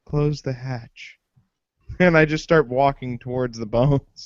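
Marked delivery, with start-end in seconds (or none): 0.1-1.1 muttered under the breath, slower. Player character spotting a lightsaber hilt on the ground, saying it under the breath. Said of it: "under my breath I say".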